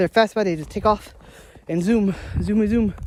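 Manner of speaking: out of breath, breathless. Walking out to get the garbage, telling the guys about the animals, out of breath. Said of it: "I'm out of breath".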